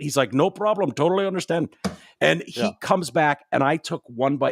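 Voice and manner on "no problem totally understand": terrible, heavily exaggerated Indian accent. Retelling what a restaurant worker said: worst Apu Indian accent. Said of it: "It's the worst Indian accent".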